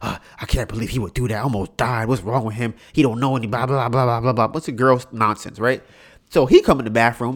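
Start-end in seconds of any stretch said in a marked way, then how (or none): 0.0-4.5 acted-out worked-up anger, mad and huffing. Retelling how she complained in the bathroom: imitating her being mad and huffy. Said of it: "she's all mad and huff".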